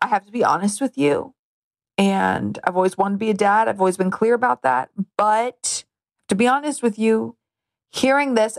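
ordinary talk, nothing marked

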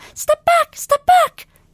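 very high, loud, frightened squeaky creature cry. A tiny hologram warns the lieutenant to stay away; squeaky voice. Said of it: "it squeaked".

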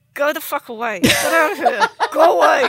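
ventriloquist talk out of mouth corner, lips still. Retelling a muted aside on a call: muttered out of the mouth corner. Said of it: "out of the corner of my mouth, like a ventriloquist".

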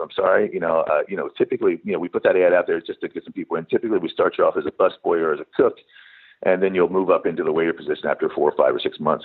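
plain

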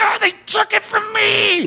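put-on anger, mad, pitched way up. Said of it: "That's how he talks".

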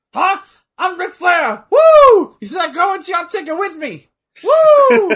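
very high, very loud, yappy yelling. Act out a verbal argument at ringside after being called old, Ric Flair yelling like a chihuahua. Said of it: "yelling at you like a fucking chihuahua".

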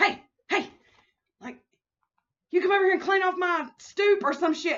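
loud, high shouting. Retelling a video where a man yells at a janitor lady, imitating a man yelling. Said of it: "he just starts yelling at people".

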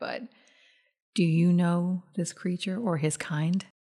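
speaking low. A character asks another about a creature, in a lowered voice. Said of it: "She's going to lower her voice".

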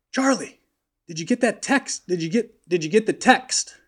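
put-on high scream. Telling a golf story, calling to Charlie on the range: retelling Pat's scream. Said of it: "Pat's just screaming".

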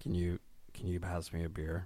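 very low, soft, hushed leading-man voice. Doing a really low voice when asked, imitating Jon Hamm. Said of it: "Jon Hamm".

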